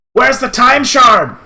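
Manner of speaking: loud, high-pitched, demanding shout. Game master voicing a character who turns to Keldor, shouting. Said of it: "He's shouting at you".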